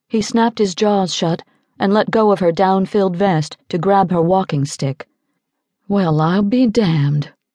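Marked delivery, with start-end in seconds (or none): 5.9-7.3 chagrined whisper, slower. A man realizes he mistook her walking stick for a rifle, whispered with chagrin. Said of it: "he whispered, his voice rife with chagrin".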